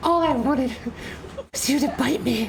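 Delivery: whispering. Voicing a small creature that stabs a player from behind: whispering in someone's ear. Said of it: "whispering in your ear".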